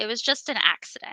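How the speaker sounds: ordinary delivery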